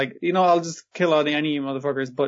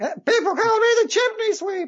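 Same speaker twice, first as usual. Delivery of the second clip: silly cartoon voice, very high-pitched squeak. Relaying a character's line to Grippon, in a comedy high-pitched voice. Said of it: "it'll be in a comedy, high-pitched voice".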